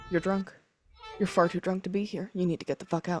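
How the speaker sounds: whispering quickly, hurried. Whispering quickly to everybody in character: whispering quickly. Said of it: "I'm gonna really quickly whisper at everybody".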